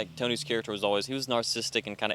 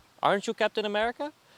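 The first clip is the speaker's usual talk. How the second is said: very high-pitched, badly put-on Mexican accent; 11 semitones higher than usual. Retelling a movie scene, quoting a man at a fruit stand: put-on mexican accent. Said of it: "the Mexican guy sounds like he's from Bangladesh".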